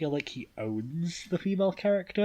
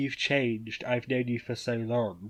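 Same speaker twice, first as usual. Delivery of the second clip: ordinary delivery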